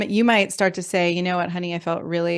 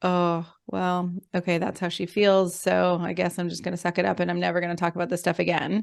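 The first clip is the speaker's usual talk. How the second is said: acted, mock resigned, collapsing, caving-in tone; 3 dB quieter than usual. Showing how a partner might collapse and give in: acting out collapsing, giving in. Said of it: "kind of a collapse into".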